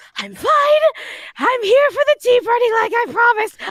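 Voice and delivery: mock winded, very high, loud gasping. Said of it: "I was panting, wheezing".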